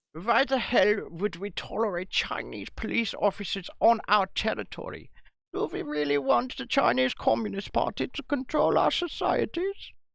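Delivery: put-on German accent throughout. Putting a question to Guy after announcing the accent, in a put-on German accent. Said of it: "I'll do it in a German accent".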